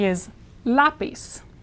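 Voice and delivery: slow, with stressed LA in lápiz. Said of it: "stress here".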